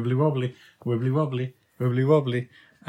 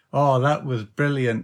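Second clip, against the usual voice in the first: sarcastic, mocking voice. Teasing another speaker about a recording just played: sarcastic. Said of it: "You're being really sarcastic".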